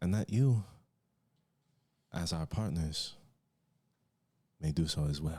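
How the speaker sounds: put-on dragon king accent. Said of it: "His voice echoes throughout the chamber".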